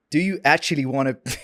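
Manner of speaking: attempted American accent. Asked to try the line again, the speaker attempts an American accent. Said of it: "but in an American accent".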